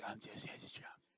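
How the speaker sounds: put-on soft-spoken voice. Retelling how the drummer introduced himself: imitating a soft voice. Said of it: "He tried to do my soft voice".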